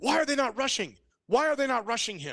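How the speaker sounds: high-pitched yell. Retelling reacting to a football game on TV: imitating own screaming at the TV. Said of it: "I was screaming at the T V".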